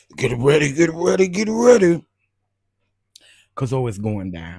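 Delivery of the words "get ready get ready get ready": booming, very loud, very high preacher cry. Telling viewers to get ready for tomorrow: Bishop T D Jakes voice. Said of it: "In my Bishop T D Jakes voice".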